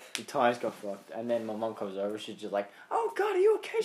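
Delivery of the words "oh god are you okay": very high, pitched-way-up shouting. After a bike crash, speaker acts out mum rushing over, retelling her shouting. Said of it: "She's shouting".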